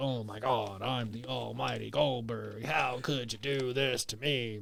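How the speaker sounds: low, complaining outburst. Imitating a wrestler upset about being replaced: imitating Goldberg complaining. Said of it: "That was a good impression".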